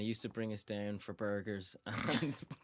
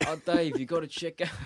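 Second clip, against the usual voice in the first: put-on gangster accent, higher and louder; 7 semitones higher, 9 dB louder than usual. Quoting what a man used to say to him, imitating Mirza's gangster accent. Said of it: "He used to sound like a like an American Italian gangster".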